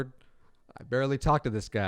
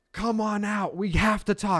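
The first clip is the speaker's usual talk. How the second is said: mock, very high-pitched, loud shouted call; 10 semitones higher, 3 dB louder than usual. Retelling how Britt called a girl out from the front door, imitating Britt yelling. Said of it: "Britt is yelling for ha- for this girl".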